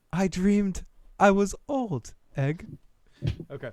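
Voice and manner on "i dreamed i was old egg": thin, frail, high-pitched dying voice. Asked for one more character impression on a live stream: Maester Aemon impression. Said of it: "Maester Aemon from his dying deathbed".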